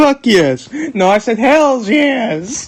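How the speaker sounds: voice cracking. Speaker correcting what another said they said: voice cracking. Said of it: "Was that voice crack intentional?".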